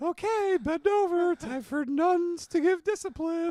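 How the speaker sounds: loud, very high, squeaky cartoon mouse voice. Role-playing a nun with a ruler threatening discipline: sounds like a cartoon mouse. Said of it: "you sound like Mickey Mouse".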